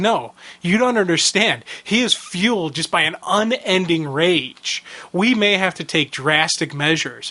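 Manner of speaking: ordinary talk, nothing marked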